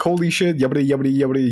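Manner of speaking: rushed caster delivery. Coaching someone on casting and pacing, showing a super-fast caster voice. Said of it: "You don't have to go super fast".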